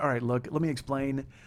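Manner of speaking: ordinary delivery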